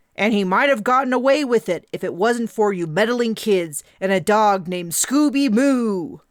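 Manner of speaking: exaggerated stern delivery. Narrating Brian turning to the group after laughing, in an over-the-top stern voice. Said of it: "said in an over-the-top stern voice".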